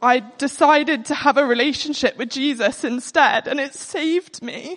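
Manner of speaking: tearful voice, crying through the words. Sharing how a relationship with Jesus saved them, crying while talking. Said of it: "I'm crying because I just".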